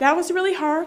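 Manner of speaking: moved, close to crying. Telling about a friend who was killed this year, emotional. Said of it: "sorry, I get so emotional".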